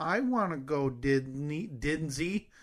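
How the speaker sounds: put-on very slow, whining little-kid voice. Retelling what a three-and-a-half-year-old said at the airport: imitating a whiny toddler voice. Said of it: "the three and a half year old voice and whiny voice of".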